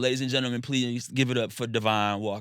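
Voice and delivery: ordinary talk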